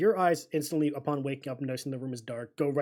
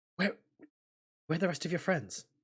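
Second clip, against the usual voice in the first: very quiet, hushed, hurried voice with urgency; 3 semitones higher, 4 dB quieter than usual. Narrating a role-play scene, a character speaks to Dell: hushed but hurried voice. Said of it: "in a very hushed but like hurried voice".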